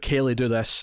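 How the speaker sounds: usual speaking voice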